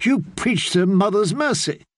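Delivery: flustered, high, spluttering and sputtering delivery. In a read story, a woman objects to what she has heard, sputtering. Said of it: "she sputtered".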